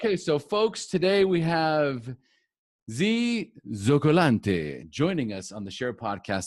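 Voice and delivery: put-on Italian accent. Podcast host introducing today's guest to listeners, in a put-on italian accent. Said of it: "That's my best Italian accent".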